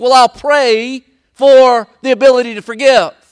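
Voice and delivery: loud, high, booming through clenched, gritted teeth. Retelling a husband's reply to his wife about forgiving, through gritted teeth. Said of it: "he kind of grit his teeth".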